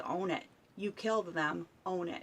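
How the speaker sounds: ordinary talk, nothing marked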